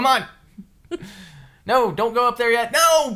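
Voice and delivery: loud, high-pitched, exasperated calling voice.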